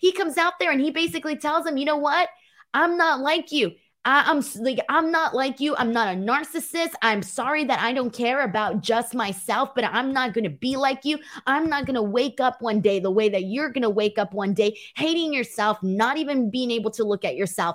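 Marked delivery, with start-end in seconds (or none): none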